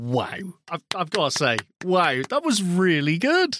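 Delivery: genuinely amazed, surprised. After trying QuickTime on the Mac, the speaker reacts, surprised. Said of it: "hear the surprise in my voice".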